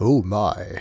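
oh my dropped low, catchphrase style. Saying a catchphrase as a joke: George Takei impression. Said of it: "That's my best George Takei impression".

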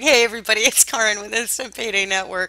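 speaking through giggles. Opening her video for her community, giggling while talking. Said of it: "I can't stop giggling".

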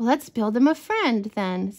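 ordinary delivery

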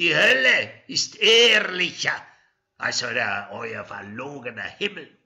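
very loud, stretched laughing shout. Amasu answers onlookers who told him he would burn in hell, calling back laughing. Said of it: "Amasu rief lachend zurück".

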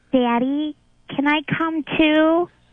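put-on slow, childlike voice like a young kid. Showing how to ask a line slowly, acting as a young child: slow, childlike voice. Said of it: "ask it slow, like you're acting it in a role, like you're young".

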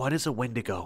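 whispering. First-person narrator asks a companion a question, whispered. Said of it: "I whispered".

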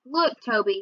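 usual speaking voice

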